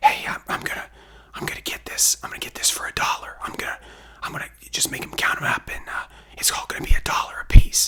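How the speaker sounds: low, hushed whisper. Retelling a comic book find, imitating someone whispering low. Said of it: "kinda whispering to, to somebody".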